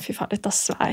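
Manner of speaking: stung, soft, breathless whisper. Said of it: "som er sånn".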